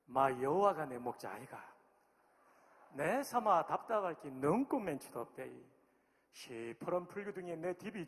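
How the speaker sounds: Korean spoken in Gyeongsang regional dialect. Presenting regional dialect versions of a text, first in gyeongsang dialect. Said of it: "먼저 경상도 버전입니다".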